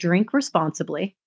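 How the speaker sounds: ordinary talk, nothing marked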